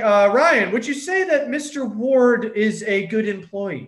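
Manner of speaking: loud, high, unnatural put-on formal voice. Retelling questioning Ryan before being told to talk normal, put-on formal voice. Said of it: "So I changed my tone of voice".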